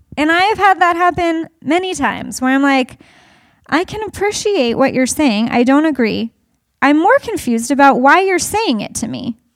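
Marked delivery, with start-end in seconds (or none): none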